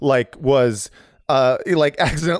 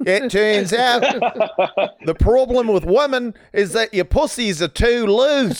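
put-on sliding into a pitched-up New Zealand accent; 8 semitones higher than usual. While doing a voice that a listener hears going into Cockney, slipping into a Peter Jackson voice. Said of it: "you kind of slipped into Peter Jackson".

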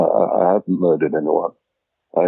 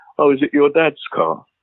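sarcastic, pitched-up, disparaging jabbing tone; 8 semitones higher than usual. Retelling what was said whenever he was pulled over, mimicking a sarcastic remark. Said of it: "sarcastically at the time".

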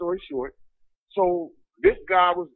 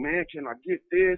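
put-on, imitated pleading, begging tone. Retelling how a fellow prisoner begged the first night: imitating someone begging. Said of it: "he immediately starts begging".

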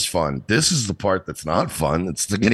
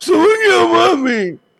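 mock whine, high-pitched, much higher and louder; 7 dB louder than usual. Retelling how a man pleaded, imitating a high-pitched whine. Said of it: "like his voice is high pitched".

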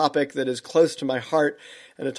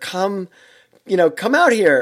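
acted-out yell, higher pitched and slower; 4 semitones higher, 4 dB louder than usual. Retelling calling from the waves to a friend standing in the ocean: retelling a yell. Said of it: "I was yelling at her".

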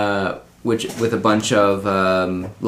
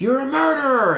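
very high, acted-out shrieking scream. Retelling how a crowd reacted to a message, imitating a screaming crowd. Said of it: "and screaming".

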